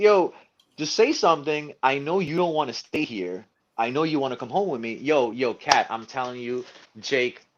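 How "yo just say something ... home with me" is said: high-pitched, unhinged, crazed coaxing pleading. Retelling how they talked to their SD card: retelling a crazed plea. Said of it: "I'm talking like I'm some crazy psychopath".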